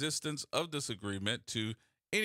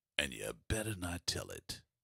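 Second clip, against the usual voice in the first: dramatic, earnest delivery, lower; 10 semitones lower, 4 dB quieter than usual. Describing a secret shadow government: dramatic, like really meaning it. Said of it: "let me say it like I really mean it".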